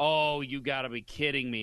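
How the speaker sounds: ordinary delivery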